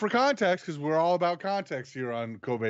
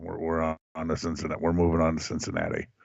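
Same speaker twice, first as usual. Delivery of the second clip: very deep, demonic voice-box voice; 11 semitones lower than usual. Told he looks like Bill Belichick, the speaker does a Bill Belichick impression with a demonic voice-box sound. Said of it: "You sound like Kane with the voice box".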